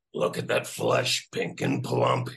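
very deep, gruff, gravelly big bad wolf voice. Performer recalling playing the Wolf in a show, gravelly wolf voice. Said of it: "I used this kind of gravelly voice".

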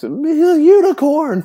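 mock proud cheer, high, slow and stretched out. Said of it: "I'm gonna say something like".

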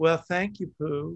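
light touch of a Southern American accent. Recalling how they voiced Kanga, say it in Kanga voice with a slight Southern accent. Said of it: "gave her a little bit of a Southern accent".

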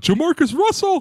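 sudden, blurted, very high-pitched shout. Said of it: "Menace just shouts out".

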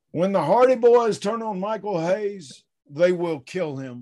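heavy, loud, high Texas drawl. Correcting another speaker's quote by redoing it: JBL impression with Texas drawl. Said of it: "you have to put that nice Texas drawl in there".

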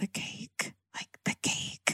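whispering voice. Retelling airport employees whispering to each other: imitating employees whispering. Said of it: "I hear all these airport employees whispering".

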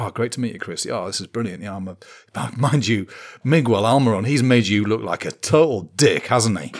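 keen, delighted, very enthusiastic, eager, friendly gushing. Retelling how Ben greeted Chris on being introduced, imitating Ben's enthusiasm. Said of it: "Ben's like so enthusiastic".

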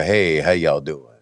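low, cool, smooth low-pitched voice.

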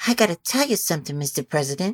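put-on whispered, tough New York accent dame voice. Repeating what she says, in a whispered, almost Marilyn Monroe voice. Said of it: "Like almost like Marilyn Monroe".

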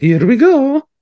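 pitched way up, called out. Joking about earning money from one catchphrase: Mario voice. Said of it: "from just going".

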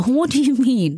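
audible smile through words. Showing how to ask what someone meant, the speaker uses a smiling voice. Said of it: "if you can hear the smile".

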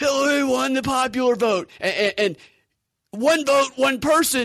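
put-on shrill, very high, yelled delivery. Retelling a man on the street interviewed by a CNN anchor: imitating a man yelling. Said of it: "he's just like yelling".

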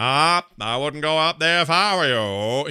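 put-on New England-accented speech. Retelling a neighbor's warning from Pet Sematary: imitating Fred Gwynne's New England accent. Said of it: "he did that, like, New England thing".

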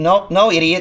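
usual speaking voice

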